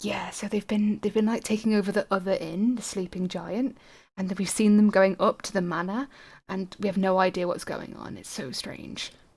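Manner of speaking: low, hushed, secretive voice. A character shares town rumors, making sure nobody can hear, in a lowered secretive voice. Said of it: "he kind of lowers his voice".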